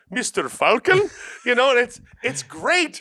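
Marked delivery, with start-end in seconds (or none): 0.2-1.1 put-on bouncy, bright, bubbly East Indian accent. You recall a voice that is clearly not Bruce Willis: do Harold Hussein's bubbly East Indian voice. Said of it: "He has this very bubbly East Indian voice".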